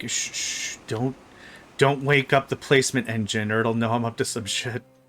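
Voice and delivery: quiet hushed voice. Placing things sneakily in the game, trying not to wake it: lowered voice, sneaky hush. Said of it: "Now I'm lowering my voice".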